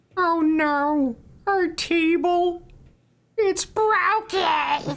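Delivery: very high, slow, drawn-out "no". Saying the line in a requested voice: Carl Wheezer voice. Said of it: "Carl Weezer".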